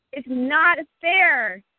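loud, high-pitched, full-throated furious angry yell. Two speakers taking turns repeating the same line; loud yelling. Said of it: "My cat just went to hide".

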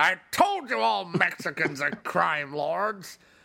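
formal, grand proclaiming voice. Joking that a famous figure reacts to a movie: Donald Trump voice. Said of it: "Donald Trump's tuned in and gone".

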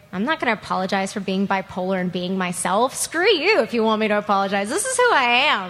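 ordinary talk

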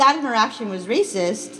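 ordinary delivery

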